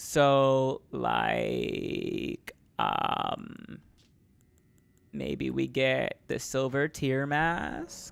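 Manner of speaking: put-on vocal fry, slow, drawn-out and creaky. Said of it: "I gotta get my vocal fry going".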